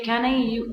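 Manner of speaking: normal talking voice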